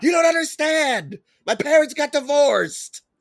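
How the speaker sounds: put-on wild, very high drunken yelling. Retelling a man running through the Boston streets yelling at everybody; imitating Ian Alley yelling. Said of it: "yelling at everybody".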